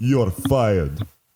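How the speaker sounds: put-on Russian accent. Speaking in character to a greasy figure: Russian accent. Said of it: "Russian accent says you're fired?".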